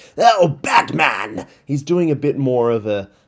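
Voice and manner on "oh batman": loud, creepy, macabre put-on cry, called out. Describing the voice acting in a movie review: Joker voice. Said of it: "he's not putting on that Joker voice".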